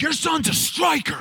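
man's voice yelling, pitched very high, shrill. Retelling a man at church yelling at the pastor: imitating a man yelling. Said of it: "He was yelling at my dad".

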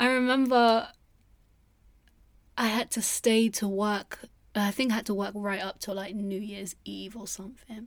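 nearly crying, on the verge of tears. Remembering a hard time working through December, on the verge of tears. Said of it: "I'm gonna cry".

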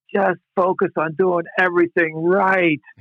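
high, frustrated, exasperated sideline coach yell, acted out. Retelling what a frustrated man yelled at a nine-year-old kid, retelling a yell. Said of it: "finally he just yells out".

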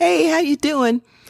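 high, bubbly, cheerful-sounding voice. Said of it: "be all bubbly and say".

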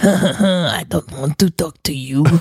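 Quebecois French accent. Asked to speak Quebecois, showing off a Quebecois accent. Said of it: "I could also do my Quebecois accent".

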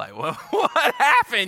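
high, loud, worried voice with laughter.

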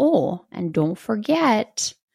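Wisconsin accent laid on thick. Repeat the reminder you just gave, showing how it sounded, in a Wisconsin mom voice. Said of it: "That's when I do my mom voice".

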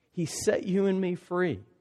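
normal talking voice

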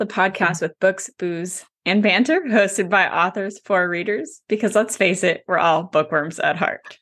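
unhurried, deliberate read. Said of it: "trying to read it slowly".

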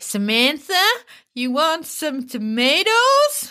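put-on lilting, stretched American accent. Imitating how an American uncle from Connecticut always says it, American accent. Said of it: "can I just say it how my American uncle always says it to me?".

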